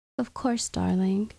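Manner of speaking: ordinary delivery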